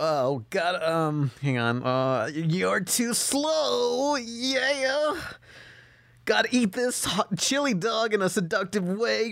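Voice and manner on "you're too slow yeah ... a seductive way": very high character voice with long drawn-out "yeah". Doing a Sonic impression when asked for one. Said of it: "I wanna hear Sonic impression".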